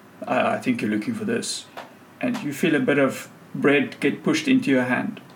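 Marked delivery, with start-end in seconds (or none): 0.3-1.7 low, rough, gruff voice. A stranger pushes bread into the listener's hand, speaking in a gruff voice. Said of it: "you hear a gruff voice say".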